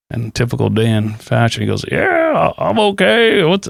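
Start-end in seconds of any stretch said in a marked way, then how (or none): 1.9-3.7 bad put-on drawl, higher pitch. Retelling a phone call with an older friend: terrible Dan impersonation. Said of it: "that's a terrible Dan impersonation".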